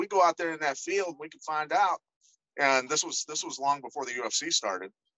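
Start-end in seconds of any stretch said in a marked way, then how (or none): 0.0-2.0 put-on hillbilly accent, a little. Quoting his foreman from Kentucky boasting about karate, in a slight Kentucky hillbilly accent. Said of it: "talked like a hillbilly a little bit".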